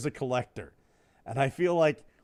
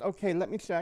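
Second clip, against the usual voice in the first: put-on Swedish woman's voice, quieter; 3 semitones higher, 6 dB quieter than usual. Retelling what the doctor said about heart risk: imitating Doctor Ruth's voice. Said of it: "She goes".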